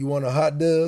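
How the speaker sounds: put-on Baltimore accent. Retelling what the lady at the cafeteria line asked: imitating a Baltimore accent. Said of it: "the Baltimore accent".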